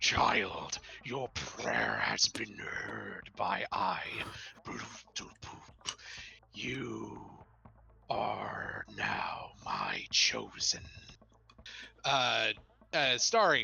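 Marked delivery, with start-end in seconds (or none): 0.0-10.8 watery, mucusy, phlegmy voice, much lower. A game master voices a glowing statuette answering a player's prayer, watery, mucusy voice. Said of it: "you hear in a watery, mucusy voice".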